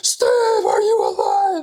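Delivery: very high, swooping, panicked, frantic scream. Retelling how Dallas came over after the whack, retelling someone screaming bloody murder. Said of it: "she's like screaming bloody murder".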